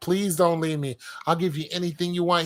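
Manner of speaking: put-on tearful woman's voice, crying. Retelling a video where a woman begs her partner to stay: imitating a woman crying. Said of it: "you saw her crying".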